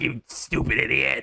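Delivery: put-on cranky old ape voice. Describing how a cartoon ape should sound, demonstrating in a Cranky Kong voice. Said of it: "that is the Cranky Kong voice to me".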